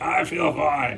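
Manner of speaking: loud, fake healthy voice, sounding unpained. Retelling answering people who asked if they were unwell, faking a well, unpained voice. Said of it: "in my best well voice at the time, unpained voice".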